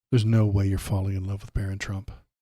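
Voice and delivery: ordinary talk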